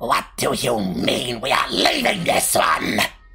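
low spider voice with insect chittering beneath words. Narrating a scene, the larger shuffling figure speaks with a chitter behind its voice. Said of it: "you hear it speak with this chitter behind its voice".

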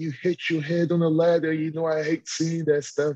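high, bawling, sobbing through tears. The speaker retells what she said on the phone after the match, imitating someone bawling. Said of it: "she's bawling, crying".

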